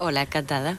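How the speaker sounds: soft, quiet voice, back from the mic.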